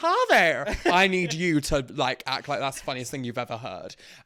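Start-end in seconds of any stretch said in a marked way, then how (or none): 0.0-0.8 very high-pitched put-on American accent. Describing an ideal partner who laughs at the joke; American accent. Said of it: "If I whip out the American accent like that".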